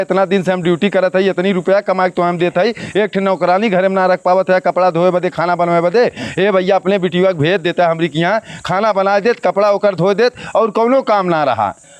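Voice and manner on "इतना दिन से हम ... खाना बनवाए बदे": ordinary talk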